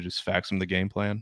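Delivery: put-on coach voice, mumbled. Imitating a coach answering a reporter's question, mumbled Bill Belichick impression. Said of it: "you just gotta mumble into the microphone".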